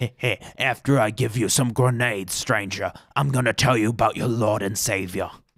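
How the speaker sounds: creepy, rasping, sinister voice. Quoting a game character who hands out grenades, creepy raspy voice. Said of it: "Some creepy dude with a raspy voice".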